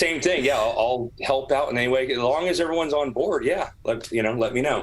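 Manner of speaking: ordinary talk, nothing marked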